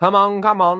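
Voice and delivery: very high, puffed-up, self-important, pompous huff. One of the yard's characters speaks to a rough newcomer, huffing pompously. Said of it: "huffed William in a pompous fashion".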